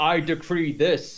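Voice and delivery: ordinary talk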